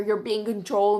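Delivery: ordinary delivery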